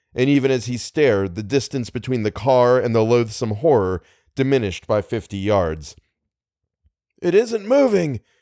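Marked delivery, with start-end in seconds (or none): 7.3-8.2 very high, cried-out exclamation. A man in a car sees a horror on the road ahead; crying out. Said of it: "cried Little".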